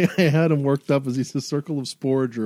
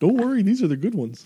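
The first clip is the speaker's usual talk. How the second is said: put-on goofy spore druid voice, higher; 7 semitones higher than usual. Voicing a spore druid handing over a mushroom: voicing Umu, a goofy spore druid. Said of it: "He just picks one off his shirt".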